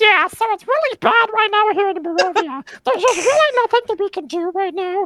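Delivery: very high puppet voice. Playing a dung beetle looking up at Gwendolyn, in an Elmo voice. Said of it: "why do I sound like Elmo?".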